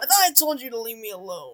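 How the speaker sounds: deep, gruff put-on character voice. Voicing a character in a game, doing a deeper voice. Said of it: "I can do it deeper".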